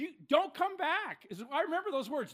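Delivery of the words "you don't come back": loud, high-pitched, enraged scream. Retelling how a father met the speaker at the door: imitating a father screaming. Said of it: "he starts screaming".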